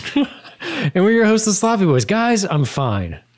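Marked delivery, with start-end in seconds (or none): 2.0-3.2 forceful, emphatic, almost angry, mad-sounding delivery. Podcast host opening the show, telling his co-hosts he's fine, emphatic, sounding mad. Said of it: "You sound mad that you're fine".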